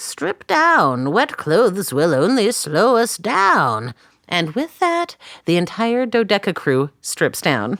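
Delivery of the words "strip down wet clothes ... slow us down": put-on swooping, animated doctor voice. Speaker recapping a network TV episode quotes Dr. P to the crew, in Dr. P voice. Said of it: "(Dr. P voice)".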